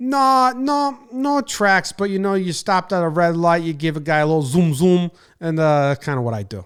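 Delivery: put-on heavy, laid-on Jersey accent, dumb guy voice. Retelling an eighteen-year-old's answer about practicing racing, in a thick Jersey accent. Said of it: "thick Jersey accent, classic dumb guy".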